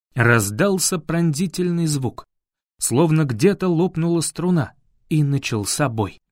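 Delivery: ordinary delivery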